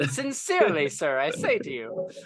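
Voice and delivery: put-on posh British accent with swooping pitch. Acting out how some people might talk, in a highbrow British accent. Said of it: "Are they speaking with like a like a highbrow British accent?".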